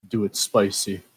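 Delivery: hushed, whispering voice. Walking up to the stage before a performance: whispering. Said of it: "I'm gonna whisper".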